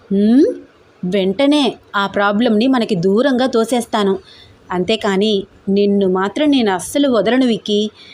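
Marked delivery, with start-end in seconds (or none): none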